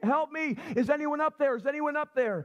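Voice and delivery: high, mild cry, high-pitched call. Telling a joke about a man dangling from a cliff, retell his scream for help. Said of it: "He's screaming".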